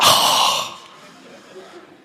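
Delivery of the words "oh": breathy, exasperated, fed-up groaning "oh". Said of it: "look at your parents and go like this".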